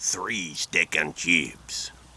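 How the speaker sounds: low, fake French accent, not real French. Retelling what Cookie said, though he spoke no French: fake French accent. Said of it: "He just did it in a French accent".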